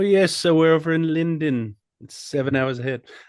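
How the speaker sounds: fake put-on British London accent. Joking about being over in London: put-on London accent. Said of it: "You sound like you're from London".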